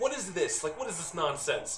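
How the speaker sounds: irate scolding tone, voice riding high. The game master voices Gunderson yelling at the guards the next morning. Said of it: "you hear Gunderson yelling at the guards like".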